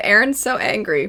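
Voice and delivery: ordinary talk, nothing marked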